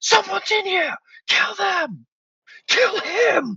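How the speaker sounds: shrill, swooping, furious shout, very high. Voicing the Lord who spots an intruder: the Lord shouting. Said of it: "and he shouts".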